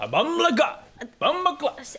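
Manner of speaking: attempted British accent, badly done, sounding Jamaican. Asked by another speaker to do a british accent: bad british accent. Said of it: "that is not a British accent".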